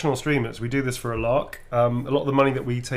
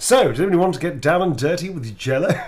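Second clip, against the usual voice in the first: put-on British accent; 4 semitones higher, 5 dB louder than usual. Imagining a British person asking a crowd a question: put-on British accent. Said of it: "Can you imagine that British person going".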